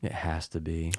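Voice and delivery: talking very quietly. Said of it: "you're talking very quietly".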